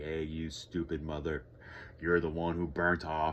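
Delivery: ordinary talk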